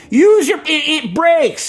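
acted-out loud shouted yelling. Telling about nearly hitting a man in a bike lane: imitating a man yelling. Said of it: "he yells at me".

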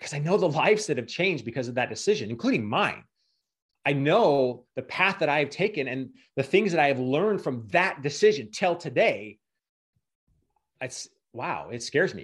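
choked up and emotional, close to tears. Speaker reflects on a past decision with the host, emotional, close to tears. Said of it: "I'm getting a little emotional here".

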